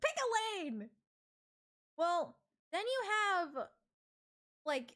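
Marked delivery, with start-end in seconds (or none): 0.0-0.9 put-on screaming, mock yelling. Imagining an inner voice fed up with indecision: pretend screaming. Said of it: "your inner self is screaming".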